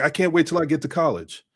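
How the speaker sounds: ordinary talk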